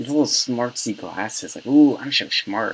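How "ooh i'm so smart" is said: teasing, smug know-it-all voice. Mocking how a politician with little glasses would sound: imagined Justin Amash voice. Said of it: "That is literally the voice I imagine him having".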